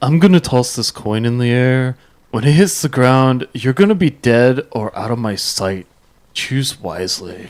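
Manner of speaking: low, spoiled, bratty dragon voice. Playing a voice game where the judge picks a bratty dragon: bratty dragon voice. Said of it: "I'm gonna go with a bratty dragon".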